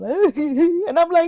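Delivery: high, crying, broken-up, helpless voice.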